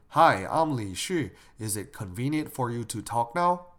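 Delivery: ordinary talk, nothing marked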